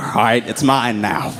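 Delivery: ordinary delivery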